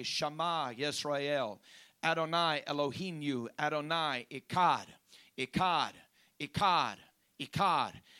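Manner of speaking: normal talking voice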